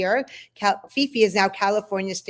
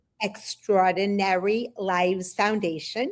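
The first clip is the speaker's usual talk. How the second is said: slowed down, at a slower pace. Repeating the foundation's full name after being asked to say it slower. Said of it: "Say it slower".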